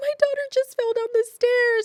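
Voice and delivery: very high, loud, tearful crying. Retelling what the mom said in the clip: imitating a crying mother. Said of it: "she's crying".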